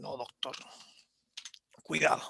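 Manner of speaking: raspy, hoarse, breathy whisper with tongue out. Demonstrating how the patient will speak to the doctor, hoarse voice, tongue out. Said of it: "así con la lengua afuera y ronco".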